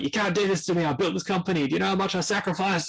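put-on aggressive screaming. Recounting a boardroom firing to friends and acting out the man's angry outburst, imitating someone screaming. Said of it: "But he's screaming".

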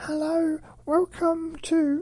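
really high-pitched voice. Imitating their own past voice from an old video: imitating own high-pitched voice. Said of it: "my voice really high pitched".

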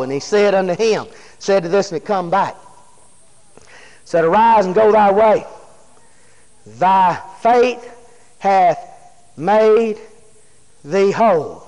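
unhurried, slow reading, word by word. A speaker reads verse 19 aloud to listeners, reading it kind of slow. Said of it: "let's read that kind of slow".

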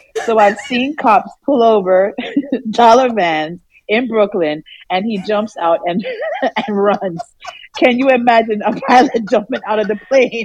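reading aloud while laughing. Reading a viewer's chat comment aloud, laughing while reading aloud. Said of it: "I'm laughing all morning".

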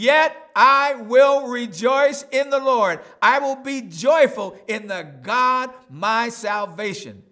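slow, loud, high, rising joyful voice.

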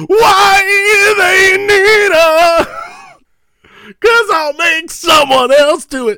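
loud, very high, very slow heavy-metal scream. Retelling how an actor delivers a line, imitating heavy metal screaming. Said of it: "going, like, heavy metal with it".

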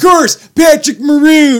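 very loud, shrill, high play-by-play announcer yell. Recalling a hockey fight call, doing a Jack Edwards impression. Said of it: "I'm doing a Jack Edwards impression".

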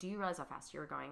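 stern, no-nonsense traffic officer voice. Retelling being pulled over for speeding, imitating a stern officer. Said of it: "he's pretty stern".

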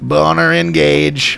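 mechanical robot voice. Imagining how a sex robot would say it, in a robot voice. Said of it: "I imagine him sort of using the robot voice".

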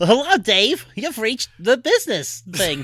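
slow, high-pitched, rude delivery. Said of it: "if that voice answered the phone".

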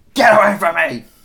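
loud high-pitched screaming. Joking about shouting at a teenager on the bus, mock screaming. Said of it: "and then I'll just scream".

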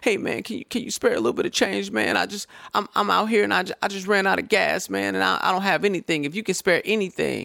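put-on whiny beggar voice. Retelling a stranger who approached him in a mall parking lot, mimicking a whiny voice. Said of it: "He tried to talk in like a whiny voice".

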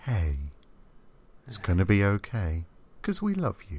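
comforting, big bear-like voice, reassuring and sing-song. Showing off the voice a friend just praised, in a big reassuring voice. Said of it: "You've got a big reassuring voice".

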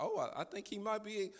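put-on hopeful excitement, held back, halting and hesitant. Retelling a bride's reaction to her groom's plan: imitating held-back excitement. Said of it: "I could hear it in her voice".

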